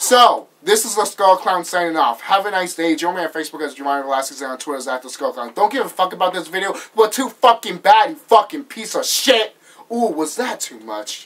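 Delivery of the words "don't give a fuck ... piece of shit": furious, loud, angry swearing rant. Signing off a gaming video to viewers, in an angry outburst. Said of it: "I'm very angry today, as you can tell".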